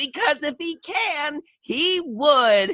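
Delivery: squeaky, very high, silly cartoonish skeleton voice. Retelling having to say painful jokes, in a funny skeleton voice. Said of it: "this this skeleton voice".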